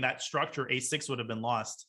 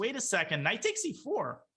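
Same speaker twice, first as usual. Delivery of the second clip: cracking, breaking voice, pitched up; 6 semitones higher than usual. Chess commentator calling moves to the chat: voice cracking. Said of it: "I don't know why my voice cracked".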